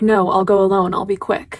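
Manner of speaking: ordinary talk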